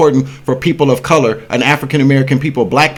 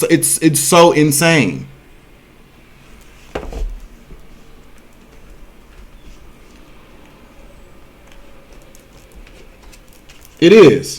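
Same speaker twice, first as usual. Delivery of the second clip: very drawn-out, slow words broken by laughter; 2 semitones higher than usual. Ranting that nobody pays attention, laughing while talking. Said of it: "I'm laughing right now".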